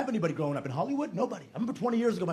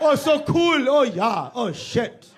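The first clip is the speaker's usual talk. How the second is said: clumsy fake Scandinavian accent, very loud, very slow, drawn-out; 6 semitones higher, 10 dB louder than usual. Showing how Americans do Scandinavian accents: bad American Scandinavian accent.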